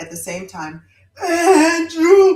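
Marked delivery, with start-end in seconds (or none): 1.2-2.4 high, loud wailing howl, many voices together. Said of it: "they all howled in the same".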